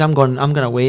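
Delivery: ordinary talk, nothing marked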